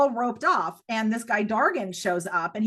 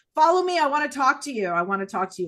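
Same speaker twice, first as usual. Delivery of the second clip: sharp, barked, pitched-up delivery; 3 semitones higher, 3 dB louder than usual. Retelling how a guy at the elevator ordered the speaker upstairs, imitating Dargan's barked order. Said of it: "he barks and he goes up".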